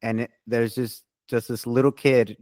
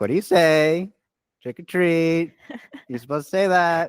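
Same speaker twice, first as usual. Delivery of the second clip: put-on enthusiastic coaxing, eager, higher-pitched; 6 semitones higher than usual. Retelling how a mom greeted a silent trick-or-treater: imitating enthusiastic mom. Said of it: "she's very enthusiastic about it".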